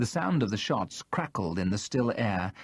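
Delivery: ordinary delivery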